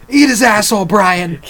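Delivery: high, loud yelling like a maniac.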